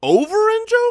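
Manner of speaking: pitch jumping up high. Repeating back another speaker's player pick, voice shooting up high. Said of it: "You see how high my voice went?".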